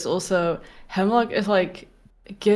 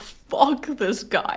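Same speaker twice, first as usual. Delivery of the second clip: mock hostile angry outburst, higher; 4 semitones higher than usual. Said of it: "right now she's like".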